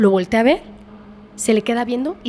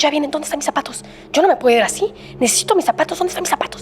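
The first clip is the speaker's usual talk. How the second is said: mock frantic desperation, higher pitch; 2 semitones higher than usual. Telling a story, the speaker acts out a dying father searching for something, imitating desperate panic. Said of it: "como que estaba emocionado, nervioso".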